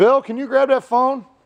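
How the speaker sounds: very high, shrill, loud yell. Mid car video, the speaker calls out to someone: yelling. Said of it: "sorry to yell that in the video".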